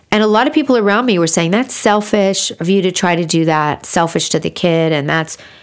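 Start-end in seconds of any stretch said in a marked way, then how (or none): none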